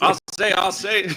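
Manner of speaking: put-on southern drawl chicken voice. Joking after a cohost compares the speaker to a cartoon chicken: Foghorn Leghorn voice. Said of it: "it's like Foghorn Leghorn".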